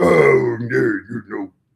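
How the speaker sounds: character voice, loud, slow and growling. Showing how the growling voice for Ted the tiny bug sounds: growling Ted voice. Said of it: "in order for me to be Ted, I have to growl a little bit".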